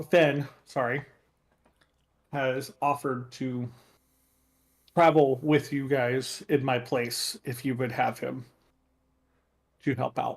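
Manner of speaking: ordinary delivery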